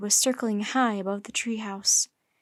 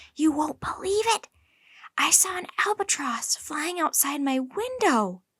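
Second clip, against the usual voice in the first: confiding, intimate tone, pitched up; 5 semitones higher than usual. A girl slips into a boy's room to share news, in a hushed voice. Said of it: "she said in a hushed voice".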